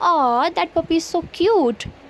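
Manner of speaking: slow, affectionate, doting aww-cute coo. Showing how you'd react on seeing a cute puppy: doting, aww-cute tone. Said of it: "इसको हम ऐसे pronounce करेंगे".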